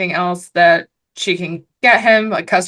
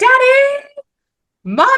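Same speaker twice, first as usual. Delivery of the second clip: shrill, very high-pitched, swooping, shrieking yell; 4 dB louder than usual. Recounting a scene where a man yells in his car: retelling a yell. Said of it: "he's yelling in the car and he's like".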